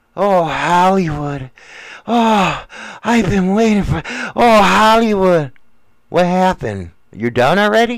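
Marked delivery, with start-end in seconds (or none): 0.2-5.5 put-on dreamy, lovesick women's voice. Imitating the women the speaker says dream of him: imitating women dreaming of him. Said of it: "I can hear you guys".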